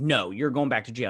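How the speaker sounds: plain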